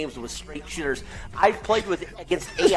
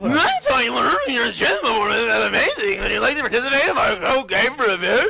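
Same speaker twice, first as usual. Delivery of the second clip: mocking parody voice, higher and louder; 7 semitones higher, 4 dB louder than usual. Reading out a chess event invitation, mocking imitation of another person's voice. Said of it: "Tyler's interpretation of my voice".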